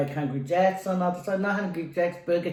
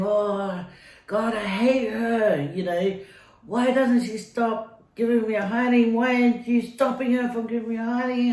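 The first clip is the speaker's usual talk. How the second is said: acted crying yell, higher; 4 semitones higher than usual. Recalling running and crying during a bad week, the speaker retells crying and yelling. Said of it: "running and crying and saying".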